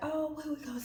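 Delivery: hushed, high stage whisper in the back. Retelling how the girls in the back seat asked about food: imitating friends half-whispering. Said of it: "whispering in the back".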